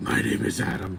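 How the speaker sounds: weird, gravelly, ground-out voice. Describing his voice in I, Frankenstein, Aaron Eckhart gravelly voice. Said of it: "this weird voice ... this gravelly voice".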